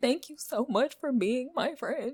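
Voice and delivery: put-on very high, blubbering, boo-hooing, crying sob. Retelling thanking their childhood best friend: imitating own crying. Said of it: "like crying, like boo-hooing".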